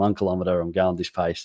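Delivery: normal talking voice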